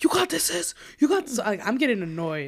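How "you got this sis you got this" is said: put-on very high, encouraging, cheering shout. The speaker recounts her sister yelling at her, imitating sister's encouraging yell. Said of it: "my sister's just yelling".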